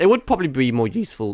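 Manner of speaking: voice cracking on a word mid-phrase. Explaining how they decide what to clip, voice cracking. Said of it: "voice crack".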